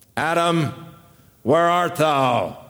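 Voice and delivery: stern, authoritative police officer voice. The speaker shows how the call to Adam is often heard, in an arresting officer's tone. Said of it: "the tone of voice of an arresting officer".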